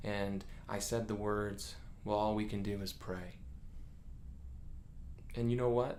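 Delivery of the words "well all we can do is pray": put-on resigned, hopeless tone, faster. Speaker re-enacts what he once said to his wife, retelling a resigned tone. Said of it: "my tone was wrong... like it was our last resort".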